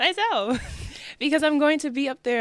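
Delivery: laughing voice.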